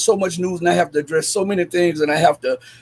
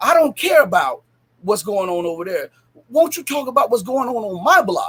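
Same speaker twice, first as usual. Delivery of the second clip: put-on edgy, annoyed, half-angry, irritated voice; 4 semitones higher than usual. Retelling what a man said during a talk about world events, imitating an almost angry voice. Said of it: "in almost an angry voice".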